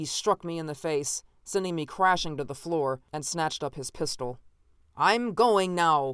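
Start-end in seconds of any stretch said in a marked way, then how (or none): 4.9-6.1 loud, raised shout projected outward. After striking the narrator down and grabbing his pistol, a man shouted. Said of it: "he shouted".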